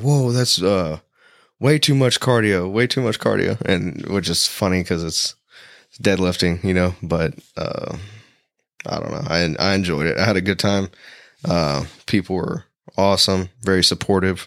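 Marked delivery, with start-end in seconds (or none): 0.0-3.6 mock loud delivery, higher pitch. Retelling a heavyweight's remark after heavy deadlift reps: imitating someone saying it loudly. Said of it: "he real loud".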